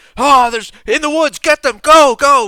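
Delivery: high-pitched, shrill, booming battle shouts. Narrating an arrow ambush from the woods, voicing the men shouting. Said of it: "you hear the shouting of, of men".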